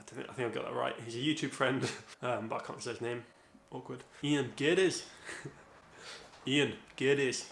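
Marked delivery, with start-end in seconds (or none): 4.2-7.5 accent from Aberdeen. Trying to say a YouTube friend's name right, in a Scottish Aberdeen accent. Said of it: "Need that Scottish Aberdeen accent".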